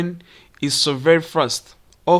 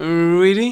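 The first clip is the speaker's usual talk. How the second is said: "really" with a tune that climbs sharply at the end; 3 semitones higher, 3 dB louder than usual. One-word question example in an intonation lesson, rising intonation at the end. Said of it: "its intonation goes up".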